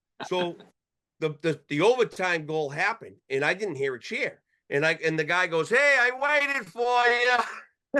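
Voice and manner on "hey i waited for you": very high, very slow, drawn-out shouting. Retelling a neighbor calling across the street, imitating a neighbor yelling. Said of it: "the guy yells across the street".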